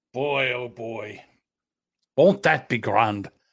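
slow, unhurried, put-on Irish accent. Playing a character excited about getting a haircut: put-on irish accent. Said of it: "I don't know why I'm doing an Irish accent".

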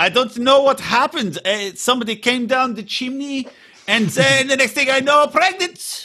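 very high, clumsy, bad put-on Russian accent. Speculating about a character's pregnancy, in a bad Russian accent. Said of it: "That was not a good Russian accent".

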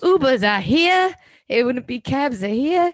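put-on strong Jersey accent. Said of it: "what's that accent Ubers".

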